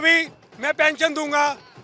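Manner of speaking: ordinary talk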